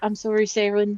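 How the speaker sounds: whispering softly. Voicing a character who apologizes to Saren: quiet whisper. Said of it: "I'm going to just quietly whisper".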